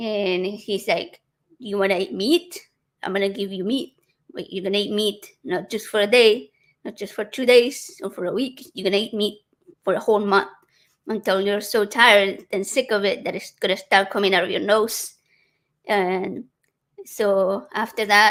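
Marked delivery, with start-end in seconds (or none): none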